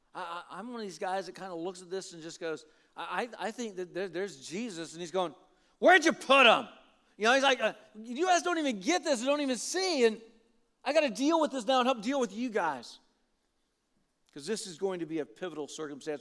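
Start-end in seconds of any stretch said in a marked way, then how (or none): 5.7-13.0 put-on angry voice, higher and louder. Acting out Jesus asking where the body was put: imitating Jesus angry. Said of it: "And his anger".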